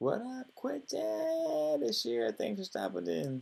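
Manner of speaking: high, loud sing-song voice.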